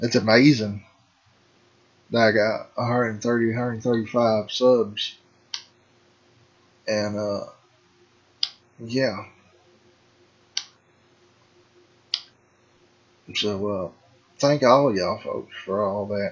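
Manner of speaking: emotional, a little out of breath. Speaker thanks folks for subscribing, emotional and out of breath. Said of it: "I'm kind of getting a little emotional and a little out of breath".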